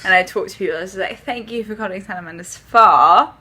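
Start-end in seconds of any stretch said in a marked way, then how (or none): 1.2-3.2 put-on British accent. Recalling answering spa phone calls in different accents, starting with a british accent. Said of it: "I started off with the British accent".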